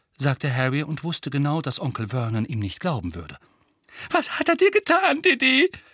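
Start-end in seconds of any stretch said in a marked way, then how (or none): 4.1-5.7 very high, trembling, quavering, raised voice. Aunt Petunia asks her son Dudley about Harry, trembling voice. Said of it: "mit zitternder Stimme".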